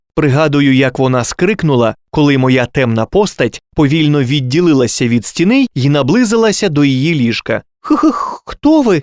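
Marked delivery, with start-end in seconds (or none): 7.8-9.0 terrified, frightened whisper pitched high. A princess sees a dark figure approach her bed at night: frightened whisper. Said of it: "злякано прошепотіла принцеса".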